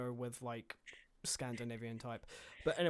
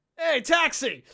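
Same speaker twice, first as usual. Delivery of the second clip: put-on New York accent, very high, shrill and loud; 14 semitones higher, 13 dB louder than usual. Hailing a taxi, suddenly switching to a New York accent. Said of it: "Suddenly turns New York and just goes".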